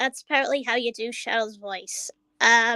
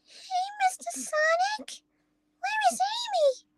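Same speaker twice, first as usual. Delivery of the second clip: very high, little cartoon character voice. Trying out Sonic character voices: Cream voice. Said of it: "that is Cream's voice right there".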